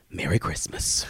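hushed, quiet mutter under the breath. Retelling mom walking into the kitchen: imitating mom saying it quietly. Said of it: "I hear her quietly say".

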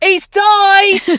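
very loud, very high, shrill shout. Retelling how a sister called upstairs with news, retelling a shout. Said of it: "she just went".

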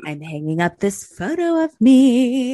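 character voice, last word "me" drawn out. Picturing Erica snooping fireplace to fireplace in the big house: imitating Erica Jane. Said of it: "picturing in my head, like, Erica".

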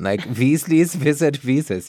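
put-on German accent. Showing a co-host how a phrase could be read, in a german accent. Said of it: "if we read it in a German accent".

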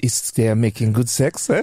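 put-on French accent. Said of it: "I'm sounding more and more French".

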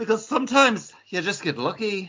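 put-on Irish accent slipping in and out, pitched way up. Doing a dramatic comic reading of Alan Scott, in a wavering Irish accent. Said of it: "in and out of that Irish accent".

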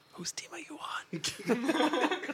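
high, slow whisper through a laugh.

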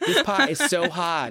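mock Boston accent. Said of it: "a good Boston accent".

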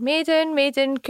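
mild, high-pitched calling out. Retelling a drunken night searching a dark street for Maiden who ran away, shouting. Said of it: "So I'm running about the street shouting".

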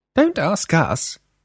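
very high, annoyed, irritable. A woman answers a man she just jumped on who asks what's going on, irritably. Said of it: "Freya said irritably".

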